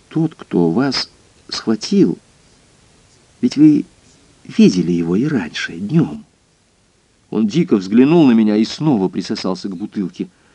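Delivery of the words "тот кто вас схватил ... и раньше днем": kind, mild, unhurried and easy delivery. The narrator addresses a frightened man, softly. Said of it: "мягко сказал я".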